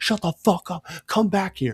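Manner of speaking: riled-up yelling. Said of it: "yell at them".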